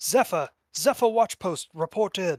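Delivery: high yelling guard voice. Voicing a City Watch guard calling for a watch post: City Watch guard yelling. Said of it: "you hear one of them yell".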